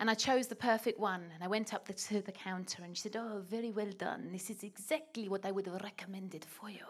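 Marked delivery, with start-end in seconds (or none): 3.2-6.8 soft, put-on vague mixed European accent. Retelling buying a candle in Paris, voicing the woman at the counter; vague French-Italian-Russian accent. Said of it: "She was sort of French".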